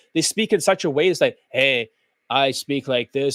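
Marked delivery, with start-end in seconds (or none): 1.5-3.3 one-note, deliberate, low, slow unvarying monotone. Describing how some guys speak, imitating a monotone voice. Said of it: "they're very monotone".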